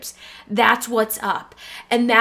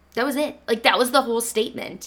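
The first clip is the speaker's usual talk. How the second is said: normal talking voice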